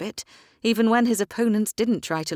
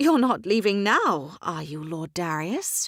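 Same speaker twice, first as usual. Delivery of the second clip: stunned, taken aback, dismayed voice. At a card game, a woman learns a lord is leaving after winning, stunned. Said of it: "Caitlin Hart is known for her good sense. / He never expects to lose his fortune to the irritatingly confident, uncommonly beautiful hoyden daring to play with the men. / then saluting the remarkably".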